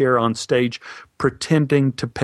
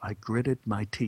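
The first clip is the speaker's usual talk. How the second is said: plain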